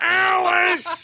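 put-on shouting sitcom husband voice. Doing an old-school impression: Ralph Kramden impression. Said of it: "Ralph Cramden".

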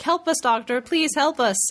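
said completely flat with no feeling at all. Fan recalls Robot Amy asking the Doctor for help: flat Robot Amy impression. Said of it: "but with no emotion whatsoever".

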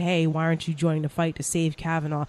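ordinary talk, nothing marked

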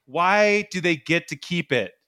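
normal talking voice

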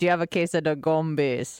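put-on Jamaican accent. Asking about the gumbies the way schoolmates said it: Jamaican accent. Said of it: "people would always say with a Jamaican accent".

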